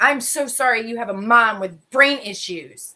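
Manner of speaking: mock angry through gritted teeth. Retelling what was said to a son while frustrated: retelling own angry words through gritted teeth. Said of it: "I gritted my teeth 'cause, again, I was mad".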